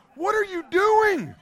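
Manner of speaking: put-on frantic, startled, panicked, very high rising voice. Retelling own reaction to a man with a cigar, retelling a panicked question. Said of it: "I'm sitting there panicking".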